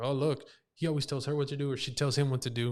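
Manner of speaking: ordinary talk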